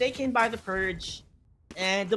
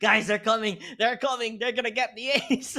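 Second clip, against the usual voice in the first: put-on panicked voice; 2 semitones higher than usual. Imitating the leader calling to teammates, imitating a panicking player. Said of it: "the leader is, like, panicking".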